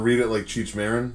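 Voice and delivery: ordinary talk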